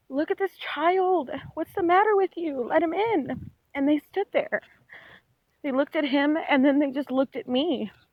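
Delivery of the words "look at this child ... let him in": play-acted high screaming, crying out through tears. Retelling begging people to let a child in, retelling screaming and crying. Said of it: "And I'm screaming and crying like".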